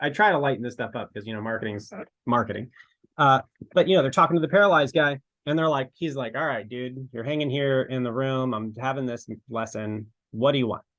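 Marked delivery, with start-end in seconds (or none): 6.3-10.8 rude, blunt voice. Acting out a scene, talking to the paralyzed man: rude Jesus voice. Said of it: "This is a rude Jesus".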